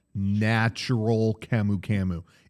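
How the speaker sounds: very slow, deliberate, drawn out word by word. Repeating an ingredient name for someone who didn't catch it, said real slow. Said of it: "I'll say it real slow".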